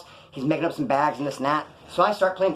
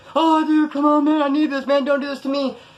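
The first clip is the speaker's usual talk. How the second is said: put-on tearful crying, very high-pitched; 10 semitones higher, 4 dB louder than usual. Retelling a robbery victim begging the gunman: imitating someone crying. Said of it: "This dude starts crying".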